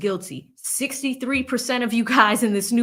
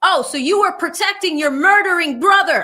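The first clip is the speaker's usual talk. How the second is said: put-on attorney voice, raised, pitched-up yelling; 7 semitones higher, 6 dB louder than usual. Retelling an attorney's words to a witness on the stand: imitating an attorney yelling. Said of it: "he was yelling".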